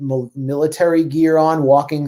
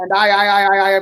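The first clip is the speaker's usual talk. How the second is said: high, mock impression voice, pitched way up. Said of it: "you should read this in your Biden voice".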